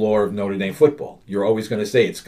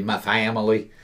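put-on Southern accent, quieter; 4 dB quieter than usual. Retelling a coach's words at a basketball game: imitating a put-on southern accent. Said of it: "starts using a Southern accent to say".

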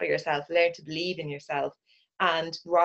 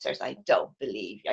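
put-on very low, deep Dublin-accented motherly voice; 8 semitones lower than usual. Retelling mother's reply on hearing about the Switzers job, imitating mother's Dublin accent. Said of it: "I can still hear her Dublin accent".

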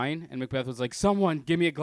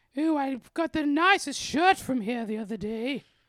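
very high, plummy, ultra-posh voice; 11 semitones higher than usual. Retelling what a man said in a thrift store: imitating a very posh-sounding man. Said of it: "he's just the poshest sounding guy".

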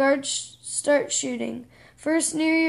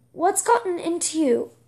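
ordinary delivery

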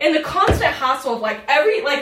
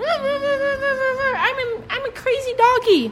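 put-on very high slow baby talk, drawn-out a; 12 semitones higher than usual. Talking to a dog in front of the phone: baby voice to a dog. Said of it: "talking in baby voice to my dog".

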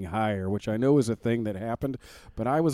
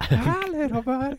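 put-on gurgly, gravelly old-man voice, much higher pitch. Speaker joining a bit about a cartoon old man, South Park old man voice. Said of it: "it's the old man from South Park".

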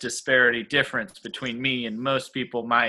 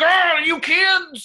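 crying out, high-pitched and loud; 6 dB louder than usual. Retelling a school play line as a Scooby-Doo villain voice. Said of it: "got to be a Scooby-Doo villain where I was like".

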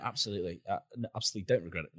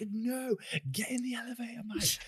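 yelling, pitched higher. Retelling yelling at the TV while watching a film: retelling a yell. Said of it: "yelling at my T V".

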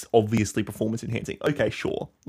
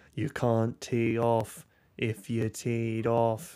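creepy, scary put-on voice; 4 dB quieter than usual. Retelling what two mime children said, in a creepy, scary voice. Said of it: "in the creepy, scary voice".

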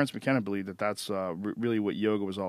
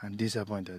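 vague, soft, poor fake Indian accent; 6 dB quieter than usual. Quoting a man's statement about a lawsuit, in a bad indian accent. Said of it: "That's my bad Indian accent".

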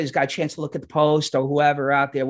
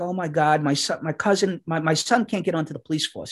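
put-on tearful, crying voice. Retelling a customer's upset words about her son: imitating someone crying. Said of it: "And she's crying".

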